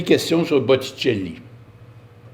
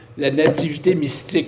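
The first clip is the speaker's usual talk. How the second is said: ordinary talk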